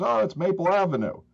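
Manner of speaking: put-on boy's Southern accent, very high. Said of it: "this little Southern accent".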